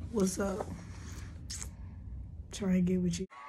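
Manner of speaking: mock seductive voice. Joking that the hoarse voice sounds sexy: put-on sexy voice. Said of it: "I kinda sound sexy".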